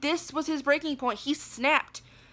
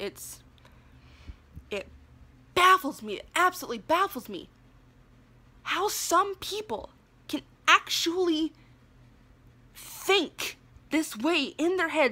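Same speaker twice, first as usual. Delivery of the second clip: speaking while fighting back tears; 3 semitones higher than usual. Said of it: "I'm holding back tears right now".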